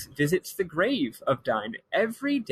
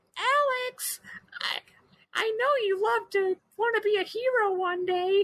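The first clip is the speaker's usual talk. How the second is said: very high, cute little voice, stretched word. Describing a dragon friend, quoting his first line: imitating a cute dragon voice. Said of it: "he's got a very cute voice".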